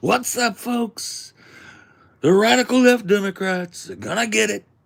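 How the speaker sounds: very loud, high, belted rally shout, full energy. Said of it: "it was a political rally for Trump".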